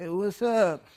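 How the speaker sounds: meek, limp, weak, timid little voice. Retelling how a guy greets someone, imitating a weak, timid voice. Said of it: "let's call it a pussy ass voice".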